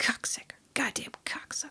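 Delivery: breathy, whispered muttering under the breath. Retelling a dad cursing after missing a pool shot: imitating muttering under breath. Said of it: "kinda say it under his breath".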